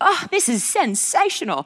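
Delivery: high-pitched, bad Australian accent.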